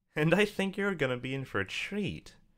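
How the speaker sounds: very high-pitched, smug voice. Taurus retorts to the mares, with a pinch of smugness. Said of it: "adding an indistinguished pinch of smugness to its statement".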